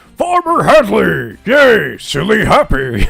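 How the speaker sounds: goofy put-on character voice. Voicing the character Silly while playing: silly voice for Silly. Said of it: "I forgot about the silly voice".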